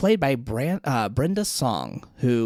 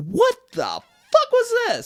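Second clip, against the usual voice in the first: acted, stunned, very high, drawn-out outburst; 5 dB louder than usual. Retelling the other speaker's reaction when they turned around: imitating a shocked reaction. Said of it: "your face of just shock".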